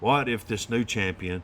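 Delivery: ordinary delivery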